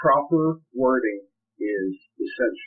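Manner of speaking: slow, careful, deliberate, weighted, emphatic delivery. Explaining divorce document wording and stressing the key point: slow and careful for emphasis. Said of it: "I say that slowly and carefully for emphasis".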